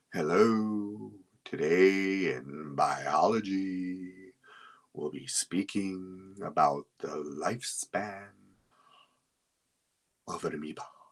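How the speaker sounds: very slow, plodding lecture voice, biology stretched out. Imitating a teacher giving a biology lesson, talking very slow. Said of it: "a teacher that talks very slow".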